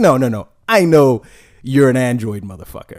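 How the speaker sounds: mock self-satisfied, smug, judging know-it-all tone. Retelling what a store employee said about the phone: imitating a smug remark. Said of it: "he was so smug when he said it".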